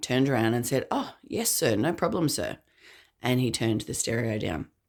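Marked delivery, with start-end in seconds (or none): 0.9-2.6 put-on, courteous, polite gentlemanly voice, pitched up. Retelling a younger brother's answer to a party host: retelling a polite reply. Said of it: "gentlemanly and polite".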